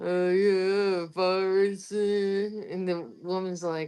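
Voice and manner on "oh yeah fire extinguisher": slow, mushy, marble-mouthed mumbling. Retelling a man at the register, talking like he had a mouthful of marbles. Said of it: "talking like he had a mouthful of marbles".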